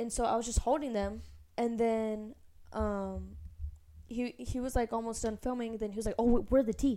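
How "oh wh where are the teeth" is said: cross, irritated voice with stumbling start. Retelling how the director asked for the teeth: imitating someone getting mad. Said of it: "getting mad at me".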